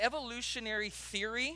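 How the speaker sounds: stress on "theory" with a rising tune. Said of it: "underline the word theory".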